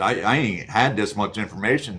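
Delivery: plain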